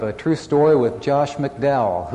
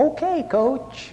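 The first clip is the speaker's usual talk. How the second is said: very high, little, squeaky mouse voice; 12 semitones higher than usual. Recalling the inner reply to their 10th grade coach, in a little squeaky mouse-like voice. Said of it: "little squeaky, like mouse-type voices".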